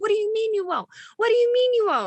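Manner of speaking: shrill, high-pitched yelling. Retelling a customer yelling after being refused jelly: imitating a customer yelling. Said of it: "she's all yelling".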